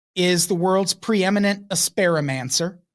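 ordinary talk

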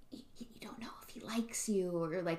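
fast, hushed, spooky whisper.

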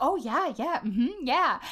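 casual, offhand crowd voice chiming in. Describing the crowd in an episode, imitating crowd side comments. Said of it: "they'll, like, say things, like".

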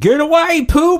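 very high, shrill, shrieking scream. Speaker imagines people in Alabama failing to flush their waste, mock screaming.

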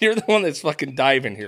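ordinary talk

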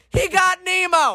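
mock high-pitched screaming outburst. Retelling a companion screaming through the pet store: imitating someone screaming. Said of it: "J P is screaming throughout the pet store".

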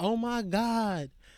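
sudden, high shriek of alarm. Telling of a club fight, speaker imitates a girl standing nearby: imitating a girl screaming. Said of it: "I heard her screams".

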